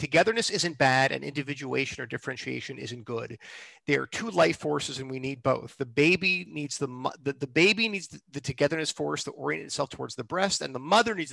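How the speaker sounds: ordinary delivery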